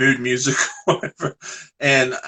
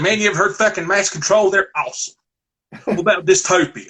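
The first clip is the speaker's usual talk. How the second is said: put-on all-out Southwest Virginia Southern accent, pitched up; 6 semitones higher than usual. Imitating Metal Mike talking about punk bands: imitating Metal Mike's Southern accent. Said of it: "he's talking like this".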